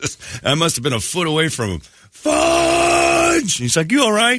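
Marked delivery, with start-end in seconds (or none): 2.1-3.6 acted, very high, full-volume shriek. Recounting walking toward a kid after an accident, retelling a scream. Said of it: "at the top of my lungs over and over".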